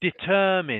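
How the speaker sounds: stress on second syllable ter in determine. Showing a learner how to say the word: stress on second syllable of determine. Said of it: "So one more time".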